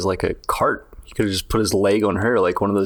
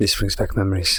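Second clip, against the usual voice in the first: muttering quietly under breath. A player's character, put in a giant jail cell, mutters: muttered under breath. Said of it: "quietly under my breath".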